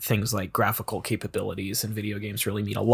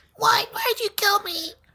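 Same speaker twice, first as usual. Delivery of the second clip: put-on very high small child's voice. Voicing a killed game character: little kid voice. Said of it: "the people you kill usually have the little kid voices".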